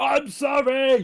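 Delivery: slow, high-pitched shouting.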